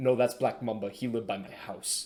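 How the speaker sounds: put-on spoken with Afrikaans accent. Retelling his dad asking a guide about a track, the speaker quotes the guide in a thick Afrikaans accent. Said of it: "in like this thick African Afrikaans accent would go".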